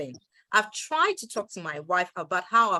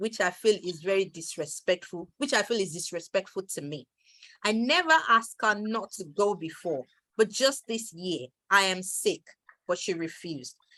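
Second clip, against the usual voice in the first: normal talking voice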